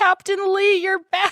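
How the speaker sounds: mock choked-up sobbing kid voice, very high. Recapping a scene where a captain returns to a kid, imitating a crying kid. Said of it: "And the kid starts crying".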